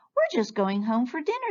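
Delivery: tiny, high, squeaking field-mouse voices in chorus. Reading a story where field mice call to Fluffy Bunny, squeaky field mouse voice. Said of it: "they squeaked".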